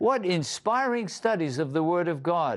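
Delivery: ordinary talk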